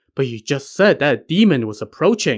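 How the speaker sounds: usual speaking voice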